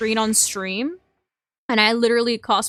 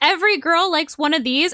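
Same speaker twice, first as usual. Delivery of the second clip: plain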